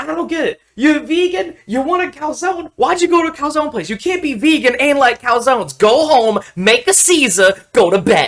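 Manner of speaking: mock furious, very high-pitched, shrill, heated rant. Retelling what a man said as he got heated while friends laughed; imitating a heated rant. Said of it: "he starts getting super heated about it".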